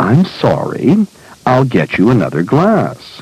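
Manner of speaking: very, overly solicitous voice.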